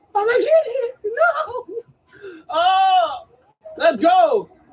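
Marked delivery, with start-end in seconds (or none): 0.3-1.6 put-on cracking voice. Retelling own shouts while watching the play: imitating own cracking voice. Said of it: "my voice was cracking".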